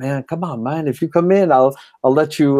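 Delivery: clumsy, bad put-on Jamaican accent. Retelling what a man near an abandoned lighthouse in Negril said, bad Jamaican accent. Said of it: "I have a bad Jamaica voice".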